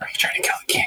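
barely voiced, hushed whisper. Speaking in character during a tabletop game scene: whispering. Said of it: "I whisper out".

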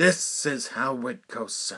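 slow, starting strong then slowly falling off. Retelling how a stranger launched into an impression: Howard Cosell impression. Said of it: "he launches into a Howard Cosell impression".

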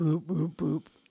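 put-on barking-dog voice. Cheering someone who just did it perfectly, in a dog bark voice. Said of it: "That was my dog bark voice".

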